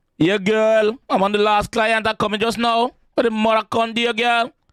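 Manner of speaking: Trinidadian accent. Speaker slips into a bit of dialogue, then apologizes, in a Trinidadian accent. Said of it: "Trini. Sorry".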